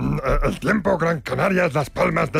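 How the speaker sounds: character voice starting with a creak.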